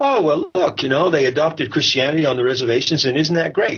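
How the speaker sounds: high, smug, self-satisfied mocking voice.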